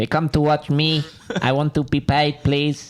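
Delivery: put-on Spanish accent. Asked by another speaker to do Seve's bits, the speaker quotes him: Seve impression in Spanish accent. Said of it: "can you do it in a Spanish accent?".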